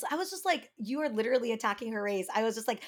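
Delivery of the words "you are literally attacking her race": normal talking voice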